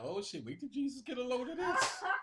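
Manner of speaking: scandalized, shocked outburst, very high pitched. Retelling how adults react on seeing it: imitating shocked adults.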